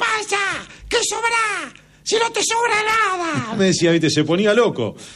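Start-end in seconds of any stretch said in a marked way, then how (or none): 0.0-3.6 very high, thin, slow squeaky yell. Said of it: "tenía una voz finita".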